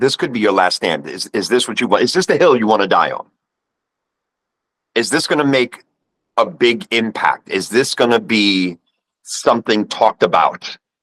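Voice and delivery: ordinary talk, nothing marked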